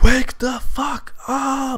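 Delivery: high-pitched, slow screaming cry. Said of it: "just screaming".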